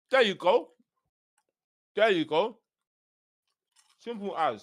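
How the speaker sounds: speaking with mouth full. Podcast host finishes a point while eating, talking while chewing. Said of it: "I'm just chomping away".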